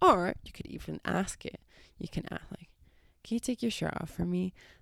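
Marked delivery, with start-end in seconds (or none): 3.2-4.5 soft, sultry, seductive bedroom voice. Giving an example of asking a partner to take their shirt off, little sex voice. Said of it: "we had a little sex voice going on there".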